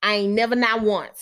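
plain voice at a steady pace. Telling listeners about people who claim to have no goals to address, the line said fast. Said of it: "You like how I said it fast?".

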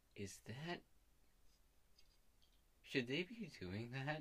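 soft, leaning-in half-whisper. A player's character leans over to another character, half-whispering. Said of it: "leans over to his and whispers".

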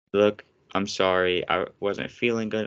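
ordinary talk

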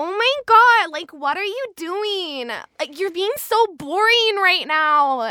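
put-on high valley girl accent, -ing said as een. Explaining how to pronounce -ing endings, demonstrating a valley girl accent. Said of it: "you will automatically become a valley girl".

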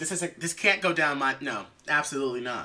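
normal talking voice

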